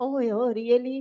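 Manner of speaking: fake patronizing, talking-down voice. Retelling how a surgeon answered patients who said they saw god, mock-condescending. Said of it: "Like a condescending voice".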